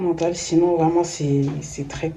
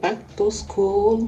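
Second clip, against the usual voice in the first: light put-on English accent, higher; 3 semitones higher than usual. Opening a back-to-school video, the speaker greets viewers in a slight English accent. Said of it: "j'essaie de faire un petit accent anglais".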